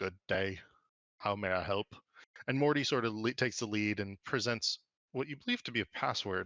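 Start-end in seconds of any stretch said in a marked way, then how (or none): 0.0-1.9 stiff, wooden, chipped, marionette-like construct voice. Narrator voicing a human-sized wooden construct greeting visitors at the tower, wooden chipped voice. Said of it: "he says with a wooden chipped voice".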